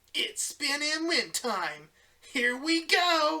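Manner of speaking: very high, swooping, loud, animated cartoon voice.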